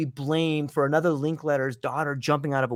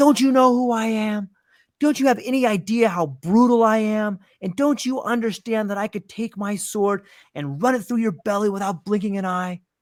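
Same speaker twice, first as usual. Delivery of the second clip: put-on vehement rant, spitting, pitched up; 6 semitones higher, 4 dB louder than usual. Retelling a man who storms up to a calm priest, acting out a spitting tirade. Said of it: "spit flying out of his mouth".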